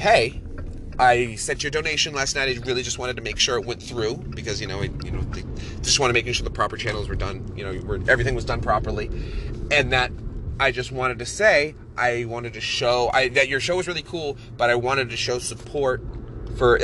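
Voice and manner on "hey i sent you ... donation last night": plain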